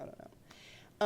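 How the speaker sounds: unvoiced, whispered aside.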